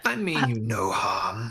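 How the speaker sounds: deep, crackling creature voice. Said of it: "it deepens and crackles more".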